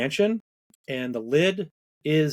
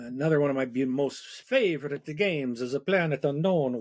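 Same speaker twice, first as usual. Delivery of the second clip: fake Italian accent, slipped in. Introducing another favorite game, slipping into a fake italian accent. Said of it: "has nothing to do with an Italian accent".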